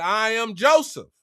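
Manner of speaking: ordinary delivery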